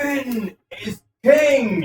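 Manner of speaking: high, drawn-out rousing shout.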